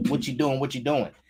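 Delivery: confrontational, badgering, aggressive yelling. Acting out a passenger right up to his ear: imitating someone yelling. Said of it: "just yelling".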